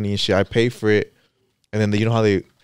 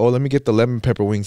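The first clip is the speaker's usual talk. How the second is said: ordinary talk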